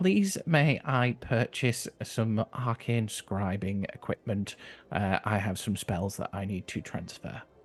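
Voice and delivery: well-mannered, polite, courteous tone. Playing a goblin character addressing a projection, polite. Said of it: "And politely turns to the projection".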